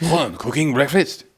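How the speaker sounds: high, mock French accent. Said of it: "I won't put on a French accent".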